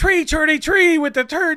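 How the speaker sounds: loud, high announcer call, every "th" as "t". Retelling how a hockey announcer said three thirty-three: imitating Pat Foley saying three. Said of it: "As as Pat Foley would call it".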